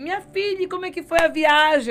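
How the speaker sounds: high, loud, eager, all worked up. A mother retells greeting her daughter back from a trip, retelling her excited question. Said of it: "Eu toda empolgada".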